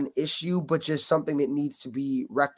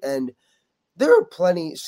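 loud voice, cracking and breaking on the word; 2 semitones higher, 5 dB louder than usual. Answering another speaker's question, voice cracking mid-sentence.

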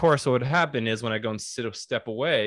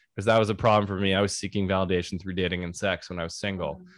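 normal talking voice

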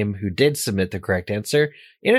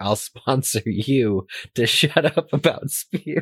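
grumbled, muttered tone; 2 semitones higher than usual. Retelling a funny book moment, muttering under breath as Ron. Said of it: "Ron just says under his breath".

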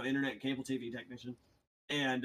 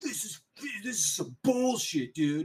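put-on furious, drunk-sounding, pitched-up angry slurred rant; 7 semitones higher, 4 dB louder than usual. Retelling how a customer reacted: imitating someone angry and slurring. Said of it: "gets extremely angry at me, like, beyond pissed".

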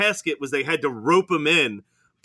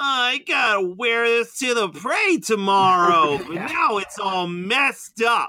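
nerdiest possible voice, high and slow; 5 semitones higher than usual. Retelling a movie scene where a character falls: imitating a nerdy voice. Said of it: "in the nerdiest voice I've ever heard in a movie".

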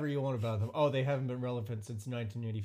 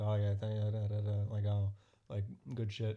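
imitated whisper, lower pitch; 3 semitones lower than usual. Retelling a video of a player hugging a rival: imitating Michael Jordan whispering. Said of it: "whispering in".

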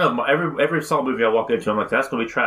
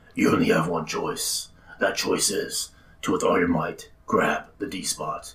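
badly put-on, breathy whispered voice; 6 semitones lower, 4 dB quieter than usual. Acting out a line from a horror movie villain: horrible Jigsaw impersonation. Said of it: "That was a horrible Jigsaw impersonation".

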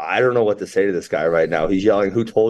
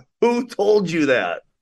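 mock very high, demanding, insistent shout; 9 semitones higher than usual. Recounting a confrontation with a man who kept yelling, retelling a yell. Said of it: "But he just kept yelling".

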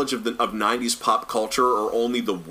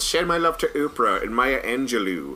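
fake villainous voice. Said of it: "hear the Doctor Evil voice say".

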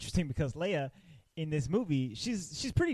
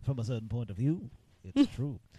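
put-on wise old mentor voice, lower; 4 semitones lower than usual. Quoting the mentor's excuse to the others: Obi-Wan Kenobi voice. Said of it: "You sound exactly like him right there".

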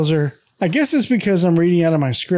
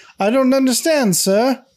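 horrible put-on British accent, pitched high; 7 semitones higher than usual. Retelling a castmate's line at a school play rehearsal: horrible British accent. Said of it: "answers in a horrible British accent".

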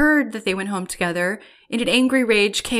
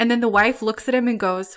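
ordinary delivery

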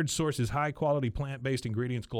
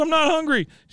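put-on shrill, very loud, high distraught crying; 11 dB louder than usual. Retelling a scene where Peggy refuses a bottle: imitating Peggy distraught. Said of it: "she's distraught at this point".

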